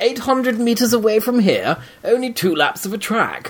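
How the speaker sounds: heavy British accent. Speaker reads a foreign gentleman's line aloud, as British as possible. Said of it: "I'll read it as British as I can".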